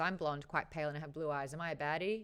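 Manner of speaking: ordinary delivery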